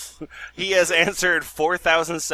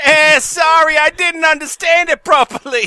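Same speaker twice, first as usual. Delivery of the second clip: put-on very high, shrill, loud, slipping West London accent; 12 semitones higher, 7 dB louder than usual. Reading out the viewer's reply: put-on west london accent, slipping. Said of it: "my accent's going all over the place".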